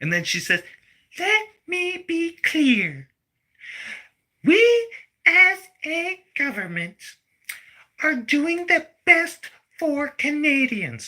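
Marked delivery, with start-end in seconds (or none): 1.2-11.1 mocking put-on toddler-like voice, higher pitch. Mocking how a finance minister sounds in parliament: mocking Freeland impression. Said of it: "She talks like a fucking toddler".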